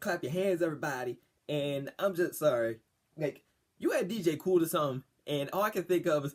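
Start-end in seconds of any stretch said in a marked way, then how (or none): none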